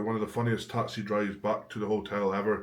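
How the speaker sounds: ordinary talk, nothing marked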